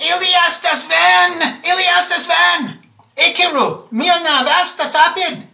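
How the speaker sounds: very high loud alien shouting, made-up tongue, "van" stretched. Narrating a game scene, voice the figure who comes out shouting at the players. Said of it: "he's shouting at you".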